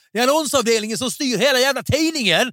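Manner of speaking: put-on Swedish Småland accent. Retelling how a man threw something down in protest, retelling a shout in Småland accent. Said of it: "så skrek han på småländska".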